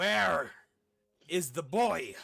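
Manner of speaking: very loud, high-pitched, carrying bellow. The narrator voices an unseen man calling out across a valley: bellowing man. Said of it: "And you hear a man bellow".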